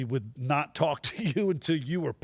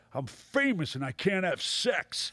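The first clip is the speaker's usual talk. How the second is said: put-on old comedian voice, higher; 4 semitones higher than usual. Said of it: "that was a good impression".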